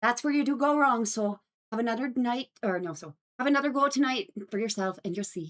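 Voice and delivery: put-on Irish accent. Reading one of her lines for the stream chat, in an irish accent. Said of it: "speak nothing but Irish accent".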